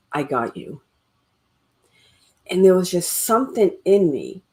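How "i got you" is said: gentle, strong, firm masculine voice. Retelling words heard from someone behind: imitating a gentle but strong masculine voice. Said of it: "in this very kind of gentle but strong masculine voice".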